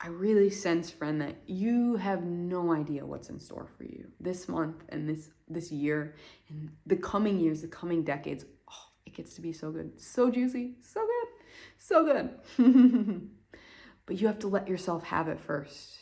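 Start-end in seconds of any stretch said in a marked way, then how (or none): 9.0-13.3 laughing, high and swooping, words bubbling. Addressing the listener as friend, laughing while speaking.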